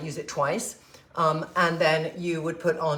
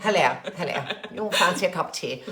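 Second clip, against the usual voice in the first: put-on costume-drama, period-drama style voice. Joking about watching Downton Abbey reruns again: Downton Abbey voice. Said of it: "so my voice is gonna be more".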